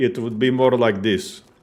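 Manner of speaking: Balkan-style Slavic accent. Demonstrating how Slavic accents differ, in a Balkan Slavic accent. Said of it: "more Balkan Slavic".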